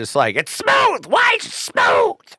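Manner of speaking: very high, sing-song, swooping mock voice. Speaker attempts an impression of the person they're talking to: imitating the listener's voice. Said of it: "that was my best proximity to your voice".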